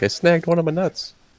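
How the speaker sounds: all-high, squeaky voice. Joking about how a friend would sound, the speaker imitates a high voice. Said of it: "His voice is all high".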